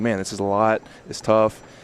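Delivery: ordinary talk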